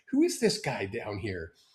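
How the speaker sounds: low-key, hushed, quiet aside. Recounting leaning over to a companion during the game, retelling a quiet aside. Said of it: "I like quite quietly say".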